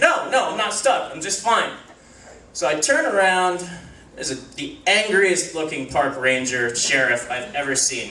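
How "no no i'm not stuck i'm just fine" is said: panicky, insistent, frantic delivery. Retelling answering someone behind them who asked if they were stuck, retelling a panicked reply. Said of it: "panicking, I say".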